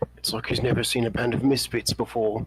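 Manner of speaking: whispered aside. Nudging someone during an introduction, say it into his ear, whispering. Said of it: "whisper in his ear and say".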